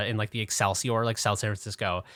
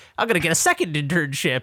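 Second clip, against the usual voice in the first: mock naive optimism, higher and louder; 7 semitones higher, 5 dB louder than usual. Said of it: "young, naive, like, whatever, twenty-one-year-old [name]".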